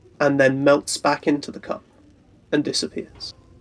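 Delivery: ordinary delivery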